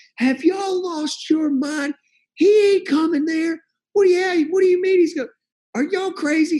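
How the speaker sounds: imitated yelling. Recounting a coach yelling at him and another coach, retelling a yell. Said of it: "He just starts yelling".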